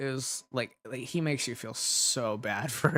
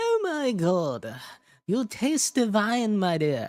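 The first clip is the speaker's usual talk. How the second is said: slow sinister clown villain drawl, swooping up high; 8 semitones higher, 4 dB louder than usual. Imagining the Joker kissing the listener's neck, in a Joker voice. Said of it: "Imagine the Joker kissing along your neck".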